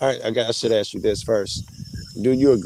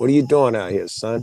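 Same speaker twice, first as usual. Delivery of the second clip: stern, questioning police officer voice; 3 dB louder than usual. Acting out a scene where a cop questions someone, playing the cop. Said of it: "I'm the cop".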